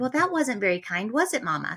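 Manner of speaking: normal talking voice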